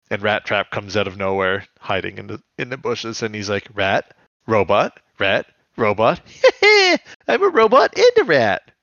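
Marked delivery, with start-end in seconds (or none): 3.7-8.6 high, loud, swooping, bouncing character voice. Retelling a scene where Rat Trap comes out of the bushes: Rat Trap impression. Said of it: "That was actually a pretty good impression there".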